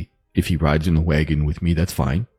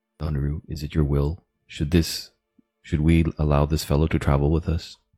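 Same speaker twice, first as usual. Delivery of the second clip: put-on, half-whispered delivery; 3 dB quieter than usual. Praying in character to a goddess: half-whispering in character. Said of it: "I whisper to Donaru".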